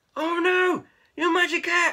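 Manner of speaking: loud, drawn-out storybook exclamation, cried out. Reading a story aloud, the cats cry out to Keith: crying out. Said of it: "cried the cats".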